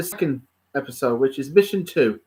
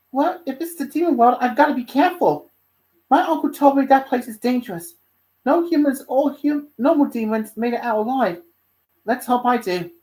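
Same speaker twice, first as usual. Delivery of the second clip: put-on high, young ten-year-old kid voice; 6 semitones higher than usual. Reader voices a boy character's line in a story: ten-year-old kid voice. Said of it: "doing the voice of him and as a ten year old kid".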